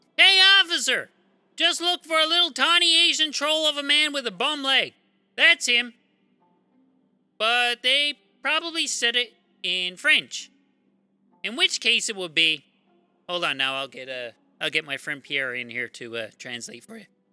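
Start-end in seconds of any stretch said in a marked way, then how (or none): 0.2-6.0 high-pitched, full-tilt, play-acted screaming. Retelling how onlookers called the cops on a man, imitating onlookers screaming. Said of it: "they're screaming at him going".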